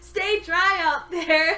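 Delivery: loud, slow, mocking delivery.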